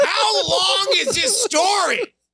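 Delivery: very high, fed-up, impatient snap. Cutting off a long story, snapping impatiently. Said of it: "I just snapped".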